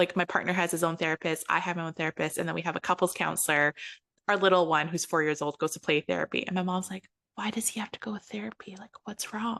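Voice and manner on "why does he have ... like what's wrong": soft, hushed whisper kept under the breath. Retelling a question from the mom, imitating someone whispering. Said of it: "You don't have to whisper it".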